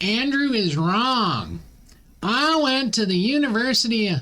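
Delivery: mocking, slow, high, stretched-out put-on Southern drawl. Speaker quotes a woman's Facebook reply to his post in a put-on southern accent. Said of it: "I don't know why I'm giving her a southern accent".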